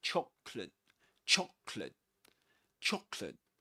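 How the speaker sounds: British pronunciation of chocolate. Showing learners how to pronounce the word: British English pronunciation of chocolate. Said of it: "That's in British English".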